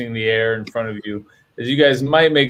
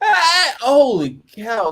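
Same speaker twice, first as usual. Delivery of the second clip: very high, full-voiced, swooping yelling; 14 semitones higher than usual. A character comes back to himself and speaks; shouting. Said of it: "sorry for shouting".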